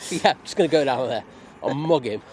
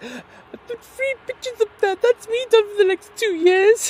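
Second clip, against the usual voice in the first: very high-pitched, very loud, shrill mocking voice; 8 dB louder than usual. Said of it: "you literally do have that attitude".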